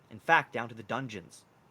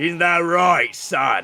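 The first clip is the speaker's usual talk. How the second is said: loud, booming, roaring minotaur voice. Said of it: "the Minotaur says to you".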